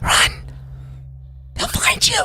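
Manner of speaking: loud, urgent, hushed stage whisper. Voicing an unseen speaker warning the party in the tunnels: loud whisper. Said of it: "a loud whisper".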